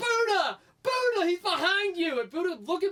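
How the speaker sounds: very loud, very high, frantic, drawn-out scream. Cardinals fan retelling yelling at the TV during a live play; retelling screaming a warning. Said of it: "as I'm screaming it".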